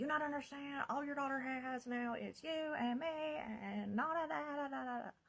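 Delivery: play-acted high, frantic screamed ranting. Telling of a phone call, the speaker retells the stepbrother's words: retelling a scream. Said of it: "he's just screaming at me like".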